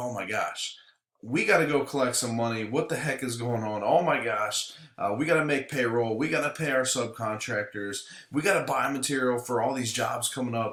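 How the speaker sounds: ordinary delivery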